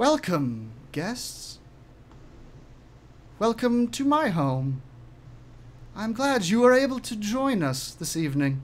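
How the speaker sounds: faintly unearthly, slightly otherworldly voice. A game master voicing a voice the players hear in their heads: slightly otherworldly voice. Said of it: "slightly otherworldly".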